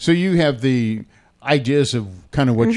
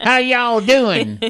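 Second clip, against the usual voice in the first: put-on Southern accent, very high-pitched; 12 semitones higher than usual. On a morning show, mimicking a typed-in AI voice: fake Southern accent. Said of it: "And with a Southern accent".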